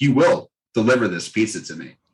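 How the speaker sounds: mock bossy, commanding, demanding tone. Retelling a drunk phone call ordering pizza: imitating a demanding order.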